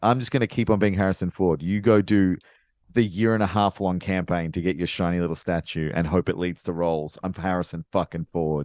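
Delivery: ordinary delivery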